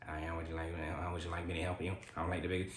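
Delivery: low, soft, monotone put-on voice.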